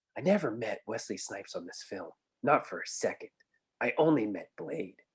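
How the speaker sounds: sincere, earnest put-on voice. Quoting an actor's interview answer, Ryan Reynolds impression. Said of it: "I'm going to say it in his voice".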